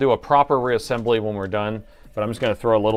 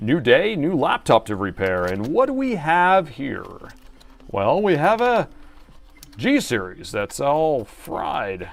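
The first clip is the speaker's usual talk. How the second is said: showy, high, swooping announcer voice; 5 semitones higher than usual. Starting a laptop repair video, the speaker slips into an announcer voice. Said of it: "it's my announcer voice".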